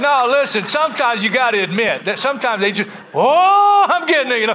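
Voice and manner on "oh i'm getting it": put-on worked-up, drawn-out, raised cry. Imitating weird people who claim a word from the Lord: imitating someone getting worked up. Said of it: "they're getting worked up here".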